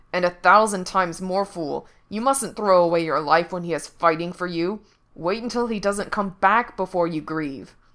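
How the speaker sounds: speaking through clenched, gritted teeth. Narrator reads the fox speaking to the green prince, through clenched teeth. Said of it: "it said through its clenched teeth".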